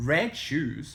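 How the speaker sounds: plain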